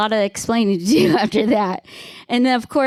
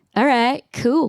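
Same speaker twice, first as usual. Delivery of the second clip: chill, laid-back, unbothered stoner voice; 2 semitones higher than usual. Retelling how a contractor friend replied to a text: imitating Alex, a cool stoner. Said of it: "He's such a cool stoner".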